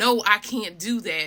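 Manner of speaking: usual speaking voice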